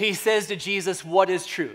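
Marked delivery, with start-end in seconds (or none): 1.0-1.8 sardonic, heavily cynical tone. Retelling Pilate's reply to Jesus: Pilate dripping with cynicism. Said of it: "with cynicism dripping from his lips".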